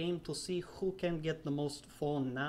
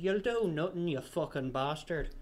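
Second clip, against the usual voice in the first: lapsing into a put-on Irish accent. Showing how he does an irish accent by lapsing into it, irish accent. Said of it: "to do an Irish accent, I just have to, to lapse into it and say".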